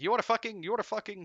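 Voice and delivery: put-on Arabic accent. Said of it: "I shouldn't do the accent".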